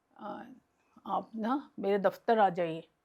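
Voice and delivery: ordinary talk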